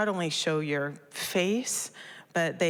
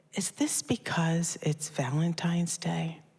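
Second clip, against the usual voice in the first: whispered delivery. Retelling a moment with a gas pump that declined a card: retelling a whisper. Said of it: "I just come in close and I whisper".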